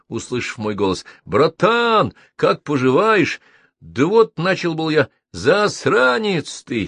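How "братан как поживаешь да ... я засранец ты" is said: merry, cheerful, pitched-up voice. Mitya cuts in on Andryukha mid-sentence, cheerfully interrupting. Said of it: "весело перебил меня Митя".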